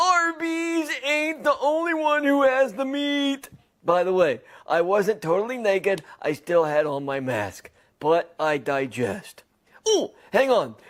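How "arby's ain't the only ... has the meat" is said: mock high-pitched hollered outburst. Apologizing to the people in an arby's, quoting what he yelled, retelling a yell. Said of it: "Sorry for being naked and yelling".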